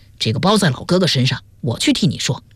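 ordinary delivery, nothing marked

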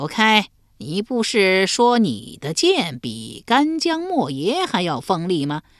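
weird, uncanny, high-pitched demon monster voice. A monster on a roof beam addresses the swordsman in a strange, weird voice. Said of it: "只听那妖怪怪声怪气地说".

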